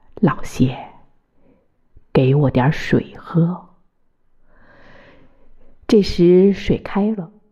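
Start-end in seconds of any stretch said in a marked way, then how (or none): 0.2-3.7 low, deep, dropped tone. A man speaks to the narrator, in a low voice. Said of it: "用低沉的声音".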